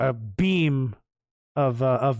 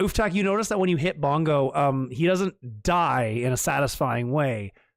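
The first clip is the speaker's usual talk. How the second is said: ordinary talk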